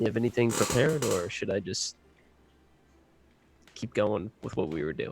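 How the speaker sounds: quiet, half-whispered, under the breath. Asking another character in the scene a quiet question: half-whispering. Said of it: "I'm gonna whisper to her".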